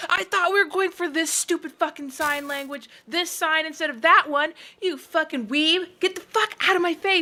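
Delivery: put-on angry screaming. Acting out a grouchy argument between party members: imitating screaming at someone. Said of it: "screaming at each other".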